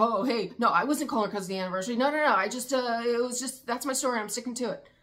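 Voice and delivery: loud, defensive voice tripping over its own words. Retelling an excuse for a call made on an anniversary: imitating Cody sounding defensive. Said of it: "Did he sound a little defensive?".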